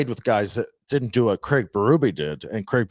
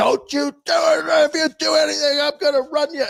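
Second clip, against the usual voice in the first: acted, very high-pitched screaming referee voice; 4 dB louder than usual. Retelling a referee's warning during a scrum: imitating a screaming ref. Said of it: "the ref was screaming at me".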